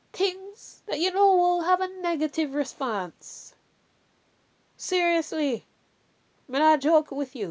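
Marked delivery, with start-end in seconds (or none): 4.7-7.5 strong Jamaican accent slipping out. Urging the audience to listen, jamaican accent coming out. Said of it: "See my Jamaican accent coming out".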